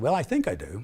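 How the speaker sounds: ordinary delivery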